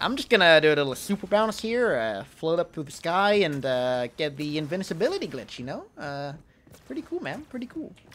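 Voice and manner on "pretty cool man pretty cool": attempted put-on American accent. Describing a game glitch, then trying a put-on american accent. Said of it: "That's my attempt at an American accent".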